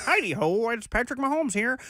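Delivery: cartoon frog puppet character voice. Joking that a quarterback sounds like a Muppet: Kermit voice. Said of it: "He sounds like Kermit".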